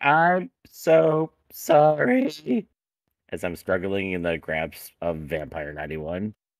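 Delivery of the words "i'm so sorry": very high, very loud tiny squeaking voice. A character held by Vampire ninety-one apologizes from the other room: tiny voice. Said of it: "you can hear a tiny voice saying".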